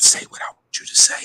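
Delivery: hushed whisper from off to the side. Retelling words heard in the background of a live: imitating a whisper. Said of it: "whispering in the background saying".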